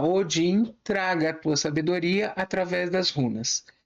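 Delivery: plain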